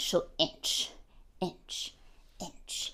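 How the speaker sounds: hushed, slow, creeping whisper.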